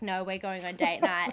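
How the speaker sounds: ordinary delivery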